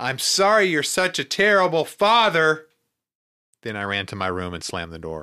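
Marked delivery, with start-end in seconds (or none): 0.0-2.7 mock loud, high, drawn-out yell. Reading a book aloud, a character calls back while running upstairs: yelling. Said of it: "I yelled over my shoulder".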